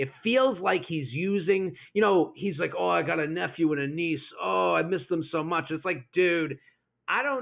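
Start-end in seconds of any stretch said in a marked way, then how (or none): 2.8-5.6 put-on oversensitive, whiny voice. Retelling a reality show date, imitating Sensitive Greg. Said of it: "Sensitive Greg".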